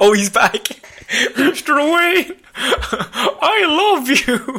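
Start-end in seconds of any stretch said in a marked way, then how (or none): 1.1-4.6 very high, slow, squeaky pull-string toy voice. Tom Holland speaks to Mr. Wayne, sounding like Tom Holland as a pull-string toy. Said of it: "why does he sound like a toy with a string on his back".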